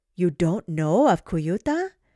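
feigned astonishment, exclaimed. Kamila reacts to her puzzled granddaughter Nala with feigned shock. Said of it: "Kamila feigned shock".

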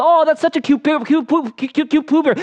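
put-on high, cooing adult baby talk.

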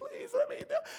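play-acted tearful, pleading crying, very high-pitched. Acting out a banished churchgoer pleading, imitating someone crying. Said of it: "And she's crying".

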